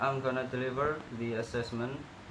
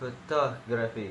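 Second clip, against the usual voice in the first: photography stressed on tog: pho-TOG-ra-phy. Correcting word stress in a pronunciation lesson: photography stressed on second syllable. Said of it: "It should be on the second syllable, making it".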